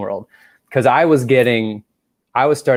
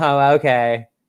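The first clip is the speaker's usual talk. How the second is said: play-acted flustered, caught-off-guard nervous tone; 4 semitones higher than usual. Retelling own reply to a woman offering help: imitating own nervous reply. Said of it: "I was so nervous that I was like".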